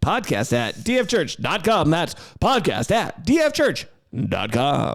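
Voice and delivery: slow, over-the-top, laid-on radio announcer delivery. Podcast host reading out the show's email address, radio announcer voice. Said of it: "It's my radio announcer voice".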